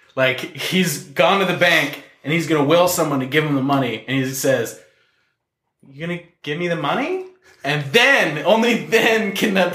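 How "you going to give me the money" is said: hesitant, unsure, every line rising like a question. Acting out a villain asking for money at the bank: very unsure, everything a question. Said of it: "must sound very unsure of himself, like everything's a question".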